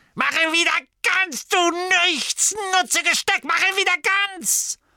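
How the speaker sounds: very high, loud, angry berating yell. After a pot smashes against the wall, shouting at her. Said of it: "Gaunt schrie".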